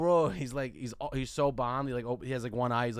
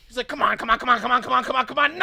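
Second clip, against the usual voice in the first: mock yell, higher and louder; 11 semitones higher, 10 dB louder than usual. Retelling a subway gamer playing alone, imitating a gamer yelling. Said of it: "He's yelling".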